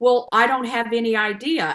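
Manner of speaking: acted-out annoyed, irritated tone. Retelling what the person heading their healthcare said, imitating him sounding annoyed. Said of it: "he was almost annoyed with me".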